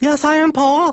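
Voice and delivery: very high, little ventriloquist dummy voice. In a ventriloquism routine, the puppet answers Paul, Tungy puppet voice. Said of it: "ventriloquism routine".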